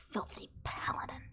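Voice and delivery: breathy, hissing, whispered ghoul voice. Voicing a ghoul that claws at a cleric: ghoul hissing. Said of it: "it's gonna hiss at".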